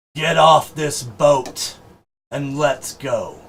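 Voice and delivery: slow, drawn-out, loud yelling. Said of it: "yelling to the effects of".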